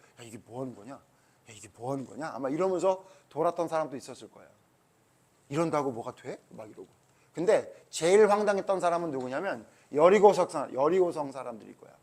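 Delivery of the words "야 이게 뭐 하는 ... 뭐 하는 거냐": barely audible, low, very quiet half-whisper. Retelling how marchers circling in silence half-whispered to each other: half-whispering. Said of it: "말하지 말라니까 귓속말로".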